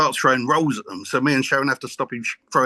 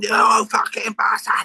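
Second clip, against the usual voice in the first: furious raging outburst, pitched up; 9 semitones higher than usual. Retelling her dad's reaction when he turns up, retelling an angry outburst. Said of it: "he tears it".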